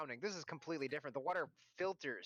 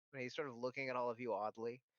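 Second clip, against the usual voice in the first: ordinary delivery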